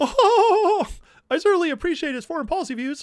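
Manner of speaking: very high cartoon-mouse voice, drawn-out oh. Quoting an interview answer to a newspaper question: Mickey Mouse-style Tucker Carlson impression. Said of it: "the trick to doing Tucker's voice is like do like Mickey Mouse".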